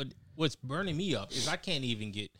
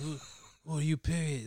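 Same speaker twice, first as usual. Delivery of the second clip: put-on, quiet, low-talking voice; 4 semitones higher than usual. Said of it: "why Mike Tyson talking all low like that".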